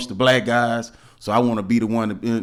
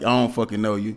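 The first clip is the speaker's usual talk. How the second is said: blunt, rude, curt delivery. Retelling a curt answer to a stranger's greeting: imitating a blunt rude reply. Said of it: "just a straight up like".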